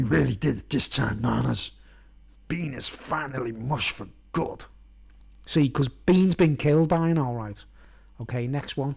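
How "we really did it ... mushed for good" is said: gruff, hushed, creaky, raspy, quiet voice. Reading a drawn story aloud, voicing Boss Nana's line in Batman voice. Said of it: "do the voice, you know, like Batman".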